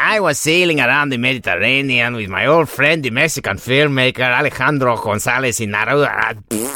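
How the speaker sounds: over-the-top put-on Mexican accent. Reading a first-person account of a filmmaker's week aloud: grotesque Alfonso Cuarón caricature. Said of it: "It's a grotesque caricature of a Mexican".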